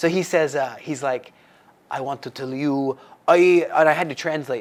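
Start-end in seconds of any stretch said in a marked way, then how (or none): 1.9-3.7 attempted put-on Arabic accent. Retelling what the driver said, imitating the driver's accent. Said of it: "I'm trying to do his, his accent".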